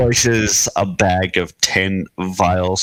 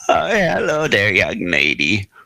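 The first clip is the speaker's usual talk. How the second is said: put-on swooping very old man voice. Narrating a shop visit, voice the very old man behind the counter greeting a customer: very old man voice. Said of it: "He's very old".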